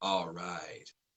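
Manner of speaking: very soft voice, rich and full. Retelling what the Pope said when he held their hands: rich Aslan-like voice. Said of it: "in that rich Aslan-like voice".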